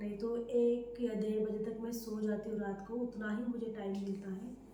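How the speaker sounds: very soft, hushed, quiet talk.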